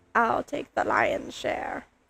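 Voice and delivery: slow, breathy, sinister villain whisper. Quoting a line from the movie as the lion villain: Scar voice. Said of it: "I don't know how it sounds with my super nasally voice".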